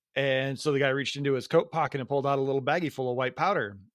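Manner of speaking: plain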